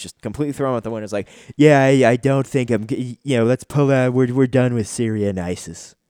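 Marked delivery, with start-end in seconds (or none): 1.6-5.9 deliberately bad delivery, loud and halting. Imitating the president pulling out of Syria: terrible Trump impression. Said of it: "That was a terrible impression".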